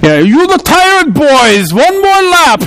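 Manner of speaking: put-on very high, drawn-out, slow German accent. Recalling the man who ran their soccer drills ordering another lap: imitating a German accent. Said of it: "he spoke with this German accent".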